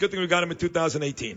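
ordinary delivery

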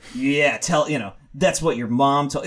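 ordinary talk

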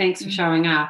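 ordinary talk

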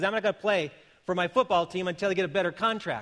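usual speaking voice

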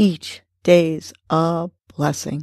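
slow, measured, word by word on the exhale.

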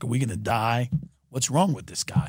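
acted terrified voice. Retelling how his friends in the back of the car reacted: imitating terrified friends. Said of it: "they were terrified".

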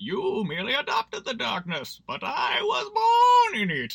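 very high, slow, swooping voice, drawn-out was. Trying again to nail a movie villain's voice after a failed attempt: Bane voice. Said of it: "that's a decent Bane voice".

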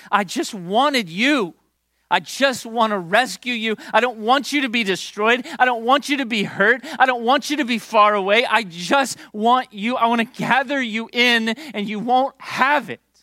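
put-on high, tearful crying, catching breath between lines. Imagining Jesus speaking with tears streaming down: imitating Jesus crying. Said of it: "Tears streaming down his face, trying to catch his breath".

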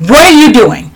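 firm, strict tone. Recalling confronting bullying in a classroom: retelling her stern raised voice. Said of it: "I raised my voice and I said".

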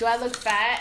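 ordinary talk

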